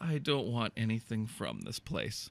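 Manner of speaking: very quiet, defeated, dejected mutter. Retelling his own words from a little corner of purgatory, mock-dejected mutter. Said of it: "I'm like dejected by now".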